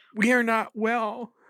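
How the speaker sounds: very high, tearful, weepy sob-talk. Reacting to a favorite losing a matchup, crying while talking. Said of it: "I'm crying right now".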